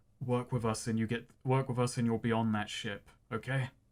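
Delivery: low, hushed, half-whispered aside. A player's character speaking privately to another character, half-whispering. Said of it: "Aegis whispers to her".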